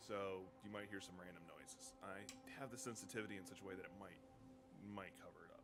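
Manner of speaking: softly spoken.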